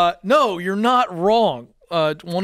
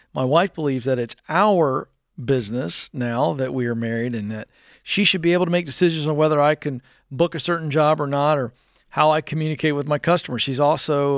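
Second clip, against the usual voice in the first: normal talking voice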